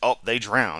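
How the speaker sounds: loud, dripping sarcasm with fake know-it-all certainty. Mocking the claim that the dinosaurs drowned: imitating someone sarcastically. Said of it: "this is sarcasm".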